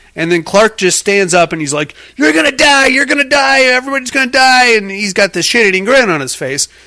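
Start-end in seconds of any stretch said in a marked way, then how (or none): 2.2-4.8 put-on, high-pitched yelling and screaming outburst. Retelling a movie scene where a patient warns Rose: imitating someone yelling. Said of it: "yelling and screaming at Rose".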